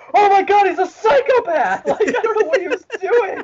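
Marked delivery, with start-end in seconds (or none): 0.1-1.8 acted-out loud screaming outburst. Speaker retells their reaction while watching a quarterback's play live, retelling a scream. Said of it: "and I just screamed".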